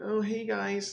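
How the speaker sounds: awkward, weird-sounding. Retelling the first stream's opening greeting: imitating own nervous past self. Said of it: "nervous, like, I kinda sounded weird".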